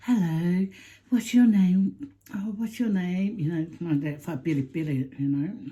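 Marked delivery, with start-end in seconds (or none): 0.0-3.4 mock sweet-natured, kindly, put-on voice. Retelling how a man at the Salvation Army greeted them: imitating a sweet man. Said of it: "he was so, like, sweet".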